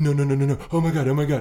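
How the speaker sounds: put-on, over-the-top fake fright, super-scared and pleading. Describing what a talk host does when magicians are on: imitating Jimmy Fallon pretending to be scared. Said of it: "he pretends he's, like, super afraid".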